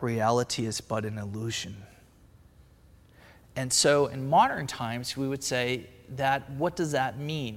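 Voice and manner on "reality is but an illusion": very flat monotone delivery. Retelling what meditators say on first opening their eyes, very monotone. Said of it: "in a very monotone way".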